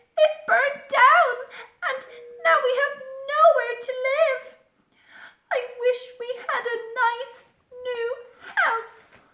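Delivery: very high, loud, squeaky mouse voice. Reading a children's story aloud, the narrator voices the mother mouse, squeaky mouse voice. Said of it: "squeaked the mother mouse".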